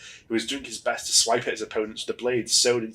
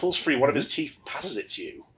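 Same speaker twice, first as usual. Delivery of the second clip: normal talking voice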